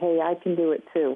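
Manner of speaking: ordinary talk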